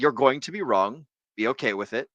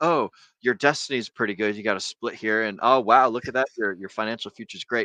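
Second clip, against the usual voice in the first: plain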